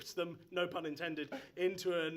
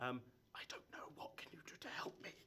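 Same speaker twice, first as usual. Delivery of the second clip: very quiet whisper; 5 semitones lower, 13 dB quieter than usual. A confused character answers someone offering help, in a whisper. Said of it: "in the whisper that only you can hear".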